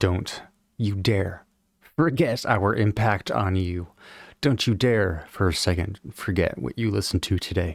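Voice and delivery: ordinary delivery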